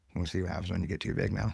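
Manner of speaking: plain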